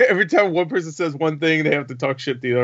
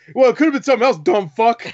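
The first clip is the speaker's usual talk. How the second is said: rapid, raised, cutting, snappy delivery; 8 semitones higher, 5 dB louder than usual. Retelling another man's comeback from a video, quick snappy retort. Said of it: "it was so quick".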